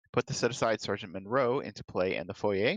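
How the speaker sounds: plain reading voice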